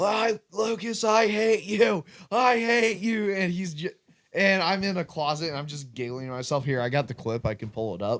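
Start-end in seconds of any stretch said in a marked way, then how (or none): 0.0-3.3 very slow, high, drawn-out, stretched-out dying scream. Retelling what a friend screamed when the ghost caught him: imitating someone screaming. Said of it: "he's just screaming".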